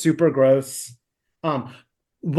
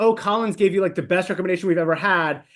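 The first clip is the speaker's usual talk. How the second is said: ordinary talk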